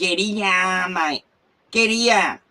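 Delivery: put-on Australian accent. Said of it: "give him a full noonga".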